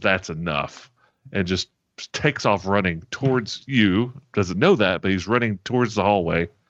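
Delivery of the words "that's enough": growled delivery, lower pitch. Game master voicing a transformed creature before it charges, growling. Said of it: "And he just growls".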